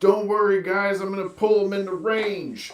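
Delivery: shrill, loud, all-out scream. Voicing a magical cultist calling to the other cultists: screaming cultist. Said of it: "and he just screams".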